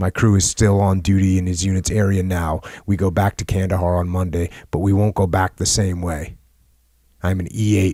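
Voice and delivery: ordinary talk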